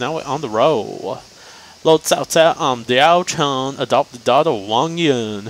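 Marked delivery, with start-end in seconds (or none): 1.8-5.5 put-on spoken in a country accent. Voicing a game character introducing herself: Diaochan with a country accent. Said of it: "Why'd I give Diaochan a country accent?".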